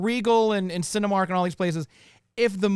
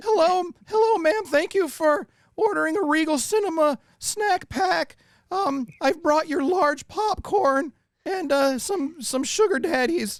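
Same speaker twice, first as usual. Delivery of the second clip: high-pitched, slow, goofy voice; 8 semitones higher than usual. Doing theater, playing a worker delivering a snack pack to a lady, Shaggy voice. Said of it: "Why do you sound like Shaggy?".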